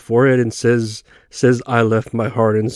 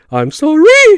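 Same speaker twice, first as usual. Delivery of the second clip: put-on voice cracks jumping up, higher and louder; 8 dB louder than usual. Retelling a movie scene where cops question a character: imitating high-pitched voice cracks. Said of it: "reacting with high-pitched changes in his voice".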